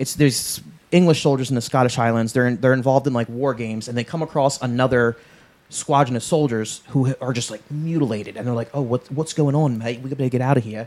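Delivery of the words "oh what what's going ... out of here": put-on accent heard as Australian. Acting out soldiers who find a mutilated squadron: Australian-sounding accent. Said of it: "that's Australian, yeah".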